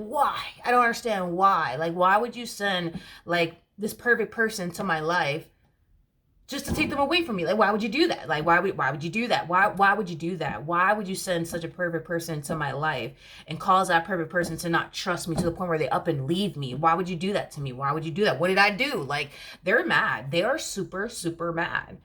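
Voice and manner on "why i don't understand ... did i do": ordinary talk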